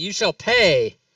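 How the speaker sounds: loud shouted battle yell in a character voice. A game player announces their character's action, then yelling. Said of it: "I'm going to yell".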